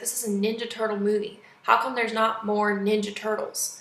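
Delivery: ordinary delivery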